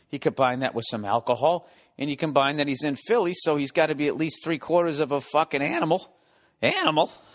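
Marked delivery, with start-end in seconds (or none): 3.3-7.1 voice cracking and breaking on the word. Host talking about a drunk fan in Philly, voice cracking. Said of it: "My voice is cracking".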